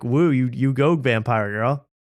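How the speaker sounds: ordinary delivery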